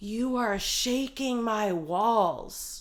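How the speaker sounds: mock very slow yelled complaining, "walls" stretched out. Retelling how a neighbor yelled through the wall: imitating a neighbor yelling. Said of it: "she yells".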